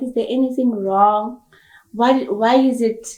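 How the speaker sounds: ordinary talk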